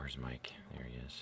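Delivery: unvoiced, very soft whisper.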